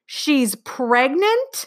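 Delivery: high-pitched shouting. A mother reacts to her daughter's news, yelling. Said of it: "yelled her mother".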